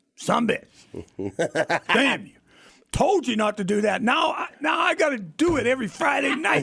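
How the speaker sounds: mock sloppy high-pitched yelling, badly done. Retelling what a coworker yelled at a Chiefs game: terrible Jack impression, yelling. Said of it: "That's a terrible Jack impression".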